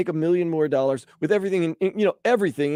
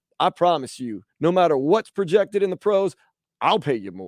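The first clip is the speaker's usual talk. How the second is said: put-on, half-committed, halfway Texas accent. Playing a rich oil person recruiting Vlad to his team, halfway Texas accent. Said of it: "putting on this halfway Texas accent".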